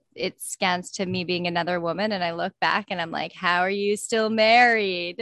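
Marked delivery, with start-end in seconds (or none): 3.3-5.2 mock sarcastic tone, slower. Speaker replays her comeback to another woman in a clip, retelling a sarcastic comeback. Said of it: "absolute best sarcastic".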